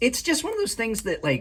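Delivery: voice cracking and breaking very high. Reviewing a knife and talking about pocket clips, voice cracking. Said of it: "my voice cracked".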